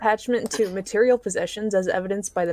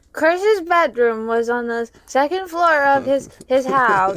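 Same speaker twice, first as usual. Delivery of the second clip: put-on confused, lost little-boy voice, high and slow; 5 semitones higher, 4 dB louder than usual. Reading a wiki passage aloud when asked: Chris Chan voice. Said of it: "can you do a Chris Chan voice?".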